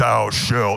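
big thundering voice. Telling a church testimony about how god talks to them, in a big thundering voice. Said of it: "there's not this big thundering voice".

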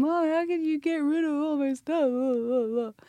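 acted, high tearful wailing, crying through drawn-out words. Retelling seeing their toys bagged out on the curb, calling to mom, re-enacting wailing. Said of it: "I'm just crying".

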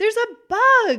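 put-on high, loud, alarmed little girl voice.

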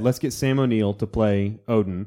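ordinary delivery

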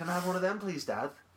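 put-on high Liverpool Scouse accent. Retelling asking his dad at the cinema as a kid, in a scouse accent. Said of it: "Why are you Scouse?".

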